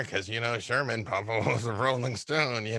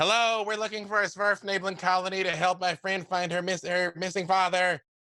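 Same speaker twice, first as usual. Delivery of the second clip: loud, booming voice, much higher pitch; 8 semitones higher than usual. Casting a spell to amplify their voice, a character hails the colony: booming loud voice. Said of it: "make my voice boom 3 times louder".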